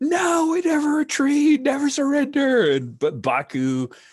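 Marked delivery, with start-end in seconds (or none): 0.0-2.7 very loud, very high, defiant scream. Voicing a gunfighter who refuses to retreat: screaming defiantly. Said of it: "he screams".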